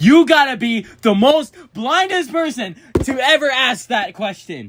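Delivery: very high, shrill, full-on loud yell. Answering a question about sirens he built, yelling. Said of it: "I'm sorry to yell".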